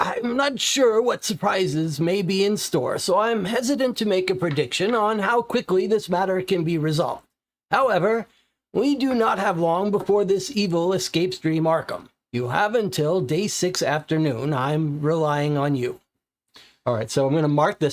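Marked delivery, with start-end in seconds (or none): 0.0-16.0 put-on elderly man's voice, up high. Asked by a fellow player, reading Armitage's game line: Armitage old man voice. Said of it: "do you want to do your old man voice?".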